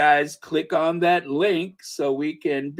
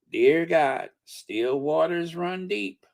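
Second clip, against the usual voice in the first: put-on strong American southern accent. Retelling what a woman said after someone did something crazy, very southern voice. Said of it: "she said in that very southern voice".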